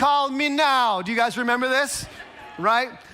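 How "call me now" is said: terrible put-on Jamaican accent, pitched up. Recalling Miss Cleo offering free readings, in her terrible Jamaican accent. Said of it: "she'd have this terrible Jamaican accent where she'd be like".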